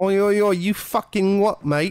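terrible put-on British accent. Trying out an accent for absent friends to judge, terrible British accent. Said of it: "my terrible British accent".

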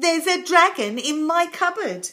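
proud tone. A boy opens his cupboard door for the crowd, announcing proudly. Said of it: "he announced proudly".

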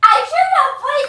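indignant shout, high in pitch and loud.

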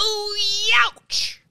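very high, squeaky, pained yelp. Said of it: "[name] from, like, the third row back being like".

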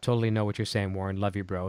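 usual speaking voice

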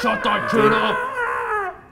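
very high, slow, frantic crying yell. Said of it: "He runs over and goes".

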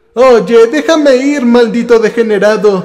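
high cry. A woman gripped by a creature screams at it: scream. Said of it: "un grito".

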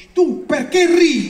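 high, loud, slow angry shout in German guard voice.

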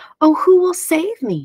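put-on teeny tiny, high little voice crying out. In the dark teeny tiny house, the teeny tiny woman cries out in a teeny tiny voice. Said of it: "cries the teeny tiny woman in her teeny tiny voice".

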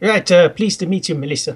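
put-on French accent. Narrating a story, voicing a man greeting the narrator, in a pseudo-french accent. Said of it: "stay with the pseudo-French accent".

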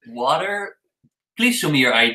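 plain

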